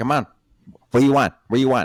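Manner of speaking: put-on loud Filipino accent. Describing how someone's filipino grandma talks to you, imitating a filipino grandma. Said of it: "She's gonna say it like that".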